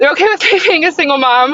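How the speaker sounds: choking up, tearful, on the verge of tears, pitched high. Telling about being left for being a single mom, on the verge of tears. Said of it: "oh, I'm gonna cry".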